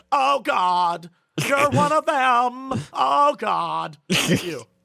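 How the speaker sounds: put-on American accent. Speaker tells a co-host they sounded like a Die Hard scene, doing Hans's fake American accent. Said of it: "he does his American accent".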